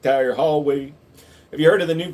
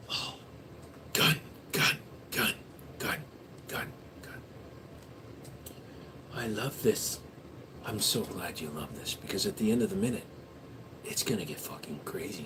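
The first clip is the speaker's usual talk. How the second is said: soft, hushed ASMR-style whisper. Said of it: "A S M R for one whole minute".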